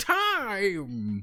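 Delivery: "time" high, drawn out, with quavering wobble. Describing a time magician, saying time with a wobble on time. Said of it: "You gotta have like the little wobble in the voice".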